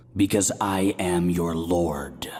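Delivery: deep, rumbling, booming voice. Speaking as a god revealing himself in a confession booth: deep rumbling voice. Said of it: "a deep rumble that shook me".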